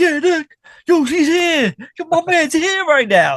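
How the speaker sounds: very high, loud, hyped-up cheering, acted out. Acting out friends greeting someone in a hotel room: imitating friends hyping someone up. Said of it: "just really hyping you up".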